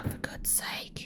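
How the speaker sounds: exasperated, unvoiced whisper.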